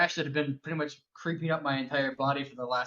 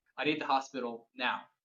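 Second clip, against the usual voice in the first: mock dead-level, calm, flat deadpan delivery. Retelling a line said to the landlord, retelling a deadpan line. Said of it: "just deadpan, and in this tone right here".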